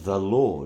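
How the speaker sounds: stress on LORD. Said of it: "I would emphasize each word".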